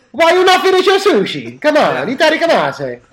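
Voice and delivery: fake Italian accent. Speakers joke about saying a japanese word; one says it in a mock italian accent. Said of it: "Why are you saying it with an Italian accent".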